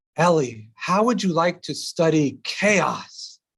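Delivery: mock eager tone, bursting with enthusiasm. Retelling what a professor asked at a reception: imitating an enthusiastic professor. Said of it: "he said it with so much enthusiasm".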